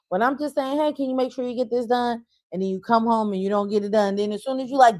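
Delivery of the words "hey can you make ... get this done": acted sweet, courteous polite tone, pitched up. Recalling asking the kids to get something done, imitating asking nicely. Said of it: "because I said it nicely a few times".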